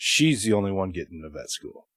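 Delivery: grave, serious, low, matter-of-fact delivery. Retelling how the instructor told a class only one student gets in: imitating Doctor Shockey, serious. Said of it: "he gets a serious face".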